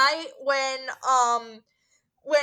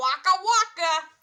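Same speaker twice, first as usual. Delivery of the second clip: spot-on comic puppet bear voice; 3 semitones higher than usual. Asked which Muppets he can do, a guest tries Fozzie Bear voice. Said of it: "I can probably do Fozzie Bear".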